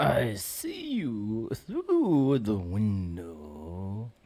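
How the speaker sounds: soft, very creepy voice, lingering on "window". Asked to give their creepiest voice, answering in a creepy voice. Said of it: "give us your creepiest voice".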